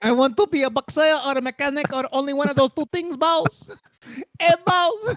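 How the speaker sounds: high put-on character voice with a Filipino accent. Doing a bit in a joking group conversation: Filipino accent voice. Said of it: "have I ever done the Filipino voice".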